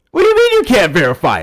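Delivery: very loud, high, swooping, heated yelling. Pressing the other speaker on why a claim isn't verified: yelling. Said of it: "yelling doesn't make you right".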